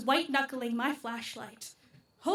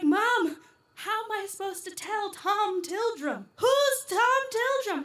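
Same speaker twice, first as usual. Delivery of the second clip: mock-panicked voice, higher-pitched and slower; 5 semitones higher, 3 dB quieter than usual. Retelling how you burst in on your mother in a panic, asking her a question. Imitating own panicked self. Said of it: "She was like".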